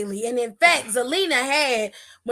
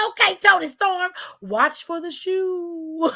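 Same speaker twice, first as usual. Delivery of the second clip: slow delivery with the word "shoe" drawn out; 5 semitones higher than usual. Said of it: "Do she say it like that every time?".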